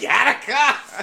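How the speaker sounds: high, slow laughing scream.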